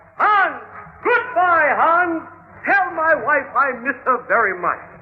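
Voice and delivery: put-on yelling voice. Retelling how a cellmate yelled from the window: imitating Bunny yelling. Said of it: "he gets in his chair and yells".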